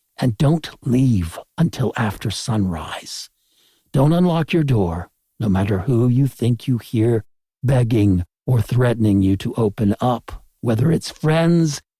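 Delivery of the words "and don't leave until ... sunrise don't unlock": plain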